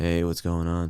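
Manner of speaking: flat put-on cartoon cat voice. Showing how the Garfield voice actor sounded: monotone Lorenzo Music Garfield voice. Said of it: "it was just a very monotone".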